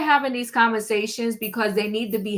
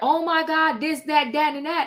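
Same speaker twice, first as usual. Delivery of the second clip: dramatic little outcry, put-on screaming; 4 semitones higher than usual. Retelling how many people reacted to the news: imitating people screaming. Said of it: "everybody now to be screaming".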